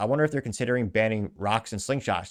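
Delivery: normal talking voice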